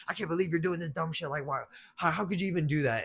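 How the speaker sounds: high-pitched, anxious, worried scolding disbelief. Retelling when mom pulled up to pick them up, retelling mom yelling. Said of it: "She's yelling at me".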